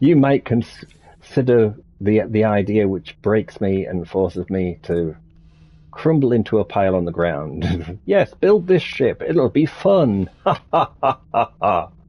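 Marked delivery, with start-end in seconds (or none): 10.4-11.9 half-mocking, semi-sarcastic spelled-out ha-ha laugh. Reacting to an idea someone might suggest: semi-sarcastic laugh. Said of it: "That was that was my semi-sarcastic laugh".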